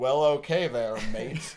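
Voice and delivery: Australian speaker's put-on American accent. Joking about accents, mimicking an Australian faking an American accent. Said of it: "an Australian do an American accent".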